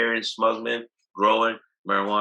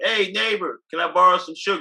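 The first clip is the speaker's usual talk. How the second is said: high, mild, friendly mock yell. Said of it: "I yell to him".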